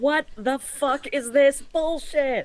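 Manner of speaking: shouting very loudly. Voicing a character reacting as two villains start to dance: very loud outburst. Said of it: "Like very loudly".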